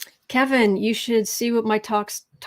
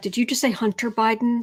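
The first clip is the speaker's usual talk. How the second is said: usual speaking voice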